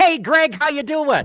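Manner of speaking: very high-pitched, feeling-filled emotional delivery. Redoing your greeting to a returning guest: with more emotion. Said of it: "let's try that again with more emotion".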